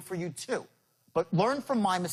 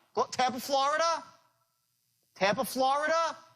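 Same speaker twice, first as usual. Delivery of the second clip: pitch rises questioningly at the end of Florida; 8 semitones higher than usual. Demonstrating a phone pitch to listeners, raising the voice up at the end. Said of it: "When you raise your voice up like that".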